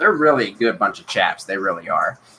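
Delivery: dry, ironic, sarcastic tone, meaning the opposite. Praising a group that ignored a request to apologize publicly: sarcastic. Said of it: "very sarcastic if you didn't notice".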